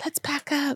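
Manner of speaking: quiet, high, hushed whisper. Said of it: "Jess is a whisper".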